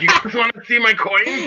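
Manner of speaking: mock drunk man voice. Imitating a drunk guy at a bar who talks about coins: imitating a drunk guy at a bar. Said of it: "Probably that guy talking about".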